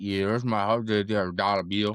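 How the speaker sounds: put-on deep South Cajun voice. Imitating a player telling you his horse's name: Xavier Legette impression. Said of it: "He'd be like".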